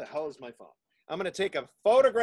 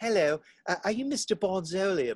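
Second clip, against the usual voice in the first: horrible, clumsy put-on English accent. Retelling how a fan from England approached: horrible English accent. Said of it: "my accent's gonna be horrible".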